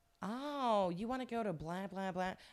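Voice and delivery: put-on American accent. Retelling how people finally answered a struggling Mandarin learner, in an American accent. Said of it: "in this American accent".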